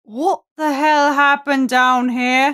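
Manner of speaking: echoing captain voice. A narrator voices the captain waking the sleeping party: captain's voice echoing out. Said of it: "the captain's voice, just kind of echoing out".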